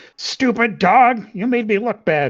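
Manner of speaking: loud yelled voice. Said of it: "just yelling at him".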